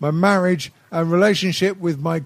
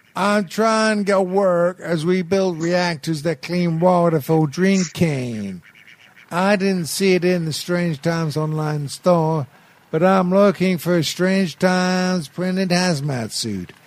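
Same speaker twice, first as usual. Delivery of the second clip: put-on American accent. Reading out a listener's question in his voice, as asked: put-on American voice. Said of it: "but do it in his voice".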